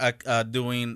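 usual speaking voice

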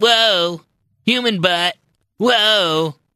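put-on annoying petulant college-kid punk voice, high, drawn-out. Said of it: "petulant college student slash Pee Wee Herman slash [name] kind of voice".

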